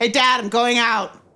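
loud shouted call. In a narrated scene, Isabel calls through a side door to her dad: shouting. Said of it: "pokes her head in, and shouts".

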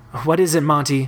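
plain

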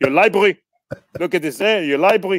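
put-on speaking with a German accent. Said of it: "with this German accent".

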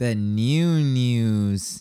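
extra whiny, nasal, drawn-out, congested-sounding voice. A host welcoming listeners to the wednesday show: extra whiny, nasal. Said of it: "that was extra whiny. That was so nasally".

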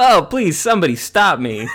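loud, high, drawn-out, slow belted wail. Trading lines with the other speaker in a Jim Carrey bit: Jim Carrey impression. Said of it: "We only have the one inflection for Jim Carrey".

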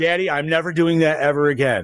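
ordinary delivery

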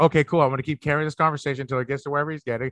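fast, quiet, rattled-off, rushed. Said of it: "So it was just like".

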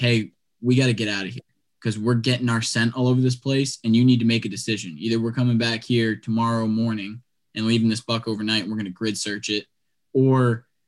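ordinary talk

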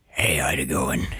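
put-on low, gravelly bullfrog voice. Imitating a man greeting someone at Eva's dressing room, in a bullfroggy voice. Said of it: "the most bullfroggy voice I've ever heard".

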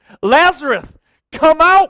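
impassioned, very loud, high-pitched shout. A speaker tells students about Jesus and Lazarus, acting out a passionate shout. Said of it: "Jesus shouts".

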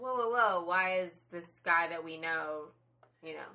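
usual speaking voice

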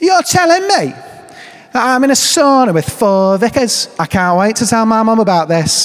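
put-on high-pitched Scouse, Liverpudlian accent. Retelling what she said on the vicars' retreat, in a Liverpudlian accent. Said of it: "that's my best Liverpudlian accent".

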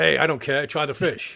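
growly put-on acting voice. Answering a pretend message as fake Chad: growly fake Chad Michael Collins voice. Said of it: "My voice is getting more growly".

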